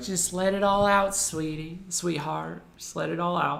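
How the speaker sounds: put-on soothing, comforting motherly voice with Southern accent. Picturing your mom comforting you: put-on Southern mom accent. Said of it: "if your mom has a southern accent".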